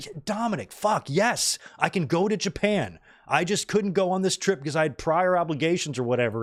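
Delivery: super annoyed, fed-up, irritated tone. Retelling how Logan Paul answered a teasing question: imitating annoyed Logan Paul. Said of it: "super annoyed at this".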